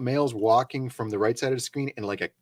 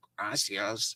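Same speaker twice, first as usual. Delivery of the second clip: mock condescending tone, quieter; 3 semitones lower, 7 dB quieter than usual. Imitating a man who thanked them in spanish: imitating a condescending tone. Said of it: "condescendingly being like".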